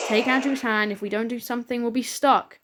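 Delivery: plain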